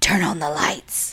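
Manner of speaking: breathy whispered possessed demon voice. Retelling a night at home, quoting a voice like The Exorcist's demonic voice. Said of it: "been used in The Exorcist and said".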